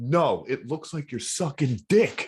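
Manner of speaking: offended, angry, slow and mad delivery. Telling a story, quoting a man who got real mad at the speaker; imitating a mad guy. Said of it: "He got real mad at me".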